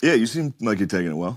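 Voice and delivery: sarcastic voice. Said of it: "What was that? Sarcasm?".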